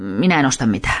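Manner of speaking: barked, curt, snapped delivery. A woman opening the door to visitors answers them, snapping. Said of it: "Hän ärähti".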